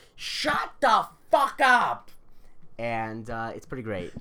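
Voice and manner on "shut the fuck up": very high, loud, drawn-out shout. Retelling what a kid on the school bus yelled: imitating someone shouting. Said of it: "turns backwards and shouts".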